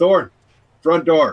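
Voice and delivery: calling out loudly. A character opens the front door again and calls someone over, shouting. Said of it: "shout out".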